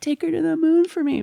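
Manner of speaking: mock, very high, raspy, rough yell. Quoting a movie line that always makes them cry: imitating someone shouting. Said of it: "He's, like, shouting".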